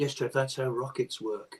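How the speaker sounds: acted-out patronising, talking-down, condescending tone. Retelling someone's reply to an explanation: imitating a condescending tone.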